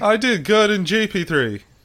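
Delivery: very high, slow, drawn-out mocking drawl. Echoing another speaker's remark in a put-on voice: Lance Stroll impression. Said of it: "That's my Lance Stroll impression".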